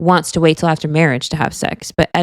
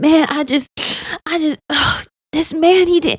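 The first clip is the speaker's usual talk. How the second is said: very high, slow, drawn-out sobbing crying voice; 10 semitones higher than usual. Retelling how someone on the show talked while crying: imitating Edmund crying. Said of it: "He's crying and he's like".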